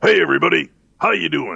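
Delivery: rough, raspy, creaky low voice. Retelling a guessing game, doing the voice heard from behind the brimstone: Lucifer voice. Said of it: "that's obviously Lucifer".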